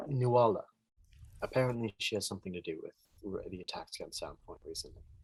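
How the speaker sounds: hushed, very quiet murmur. Speaking in character to the innkeeper about Nuala, lowered voice. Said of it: "I kind of lower my voice".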